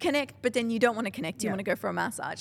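normal talking voice

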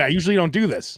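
normal talking voice

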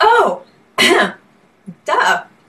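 high, loud mock duh of sudden obvious realization.

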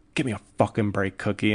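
normal talking voice

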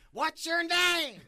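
very high, yelled screaming. Retelling an official screaming at a scared seventeen-year-old: imitating someone screaming. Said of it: "he's screaming at me".

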